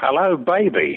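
high, stagey, put-on American accent. Imagining English community theater playing a Southern senator: American accent. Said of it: "I'm going to do an American accent".

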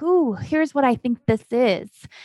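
usual speaking voice

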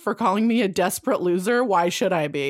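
ordinary talk, nothing marked

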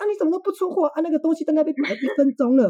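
high, rapid-fire, rattled-off scolding tone. Retelling how a caller scolded the speaker while serving a customer; retelling a rapid scolding. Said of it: "他噼里啪啦就骂我说".

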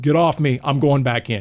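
usual speaking voice

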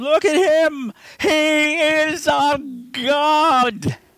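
very high, very slow, drawn-out ecstatic rapturous scream. Recapping a movie, speaker imitates the maniac priest screaming in religious ecstasy. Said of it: "he's screaming".

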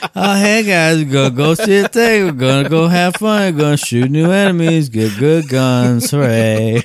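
bored, joyless, flat, unenthusiastic delivery. Mocking the other speaker's game recap voice: mock-unenthusiastic recap voice. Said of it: "your recap voice makes it the least appealing".

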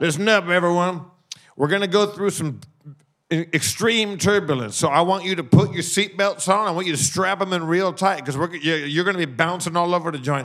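exaggerated cartoonish cowboy voice. Retelling a pilot in cowboy boots warning everyone about turbulence, in a Yosemite Sam voice. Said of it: "he sounded like Yosemite Sam".

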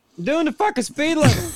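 pretend yelling. Joking about being pulled over at high speed: pretend yelling out a car window. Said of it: "I'm gonna yell at the window going".

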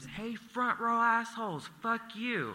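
shrill scream, pitched way up. Retelling a girlfriend yelling from an Uber window at a concert: retelling a scream. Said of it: "she screams".

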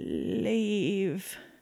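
soft gargling groan and moan. Acting out what they say, imitating a gargling, groaning moan. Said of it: "They sort of gargle and groan and moan as they say this".

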